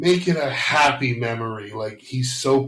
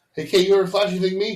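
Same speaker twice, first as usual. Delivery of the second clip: brash, in-your-face delivery, pitched up high; 8 semitones higher than usual. Quoting a movie scene to the other speaker: brash Will Smith impression. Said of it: "Will Smith just speaks much more brash".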